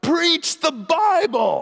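mock very high, loud yell at top of lungs. Retelling a man in a stadium crowd interrupting a sermon; retelling a loud yell. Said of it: "at the top of his lungs, he yells out".

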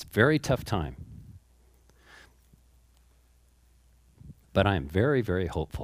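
choking up, voice catching with emotion. Announcing a move to another community during a tough time, choking up. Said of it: "I'm choking up".

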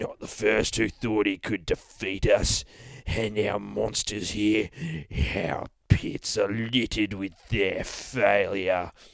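put-on contemptuous, menacing boogeyman voice in a Cockney accent. Narrating a story, the boogeyman taunts a teddy bear: Mighty Boosh Cockney boogeyman voice. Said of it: "says the fucking boogeyman. ... maybe we'll read him as the Cockney from The Mighty Boosh".

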